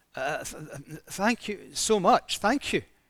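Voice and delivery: halting, stammered, very slow speech. A woman thanks the man who got her van running, stammering. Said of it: "the woman started to stammer".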